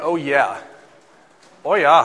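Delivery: slow, drawn-out Minnesota accent with long vowels. Recalling the mom from a TV show, saying it in a Minnesota accent. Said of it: "with a Minnesota accent".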